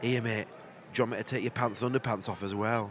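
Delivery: low, hushed, really sleazy put-on voice. Retelling what he said to his mate lying on the bed, really seedy voice. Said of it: "In like a really seedy voice".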